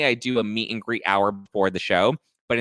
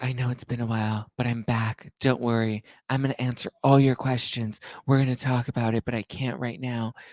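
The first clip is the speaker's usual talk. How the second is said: seductive, sultry put-on sexy voice; 4 dB quieter than usual. Reading out what she posted on Instagram, in a sultry sex voice. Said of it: "I don't know why I'm doing a sultry sex voice".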